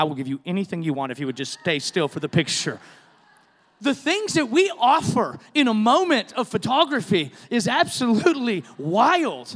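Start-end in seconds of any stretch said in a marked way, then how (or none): 0.0-2.8 close, secretive, hushed in-the-ear stage whisper. Retelling words half-whispered in his ear during a photo: imitating a half-whisper. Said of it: "I'm literally whispering in his ear".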